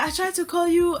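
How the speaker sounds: very high-pitched, clumsy, put-on French accent. Quoting a man who said he tried to call: imitated french accent. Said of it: "I'm not gonna do a great French accent, but I'm trying my best".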